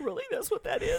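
incredulous, stunned, very high squeak.

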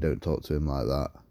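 normal talking voice

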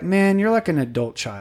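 ordinary talk

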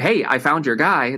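ordinary talk

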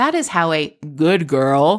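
special put-on air-quotes voice, loud and slow. Demonstrating the special voice wished for every time air quotes are used: loud air quotes voice. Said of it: "that's my air quotes voice".

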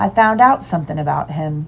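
plain

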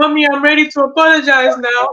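put-on high, tearful child voice broken by sobs. A mother retells her child coming back to apologize, imitating a child sobbing. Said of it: "in a sobbing voice".

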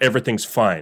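imitated angry tone. Acting out a woman's reply to "are you okay": imitating an angry voice. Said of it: "in an angry voice".

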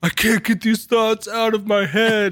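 shrill, very high-pitched yelling outburst. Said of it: "he just starts yelling".

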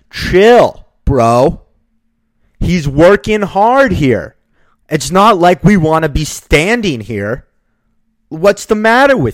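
very loud, drawn-out, shouted retort. Retelling shouting back at a man who yelled at a worker: retelling a yell. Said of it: "I yelled back at him".

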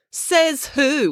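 menacing, threatening tone, very high-pitched. As April, answering a boy who spoke up to her, menacingly. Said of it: "asked April, menacingly".

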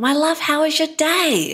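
really excited, very high-pitched voice. Retelling greeting him at pickup, with a mock-excited greeting. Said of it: "I say in a really excited voice".

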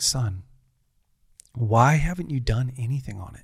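frustrated, pressing, demanding tone. Retelling how he asked why nothing was done: imitating someone frustrated. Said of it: "he was really frustrated".

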